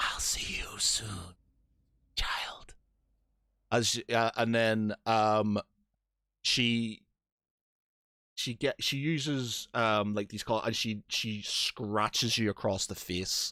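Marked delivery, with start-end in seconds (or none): 0.0-2.7 soft, breathy whisper, close to the ear. Storyteller voicing a woman speaking into the listener's ear, whisper. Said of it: "she whispers in your ear".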